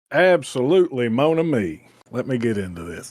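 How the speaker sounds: best-effort put-on Cajun accent. Given the floor to cover Gambit's history, answering in his best Cajun accent. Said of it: "That's my best uh, Cajun there".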